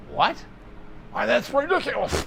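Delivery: very high, raspy, rough cartoon duck voice. Answering viewers on a Facebook Live, doing a Daffy Duck impression. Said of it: "That was my Daffy Duck in, impression".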